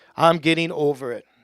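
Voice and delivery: loud, firm, emphatic, with full conviction. Leading listeners in repeating a phrase: louder, like you mean it. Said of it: "Say it like you mean it. Louder".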